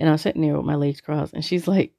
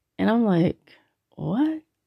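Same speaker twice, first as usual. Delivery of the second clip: ordinary talk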